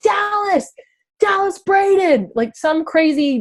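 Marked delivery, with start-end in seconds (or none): 0.0-2.3 shrill, very high scream. Retelling screaming at a player in a tunnel: retelling a goalkeeper-voice scream. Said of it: "I used like my goalkeeper voice".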